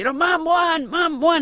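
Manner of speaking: put-on thrilled boy voice, excited yell, high, drawn out. A mother retells her son shouting to his sisters on the phone, imitating son screaming excitedly. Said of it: "He's screaming off the phone to his sisters".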